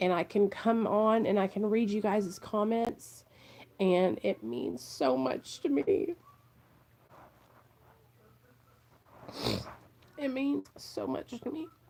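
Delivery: soft, moved, emotional, heartfelt grateful tone. Talking to viewers about reading their comments, speak emotional. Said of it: "I am so emotional today".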